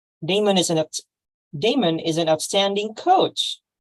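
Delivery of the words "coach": the word coach strongly stressed. A coach of vocal emphasis demonstrates the sentence for Phil; stress on COACH. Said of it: "how about the word coach?".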